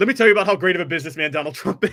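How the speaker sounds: put-on fake phone voice. Retelling how Trump called radio shows pretending to be someone else: imitating Trump's fake voice. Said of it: "pretending to be someone ... in a fake voice".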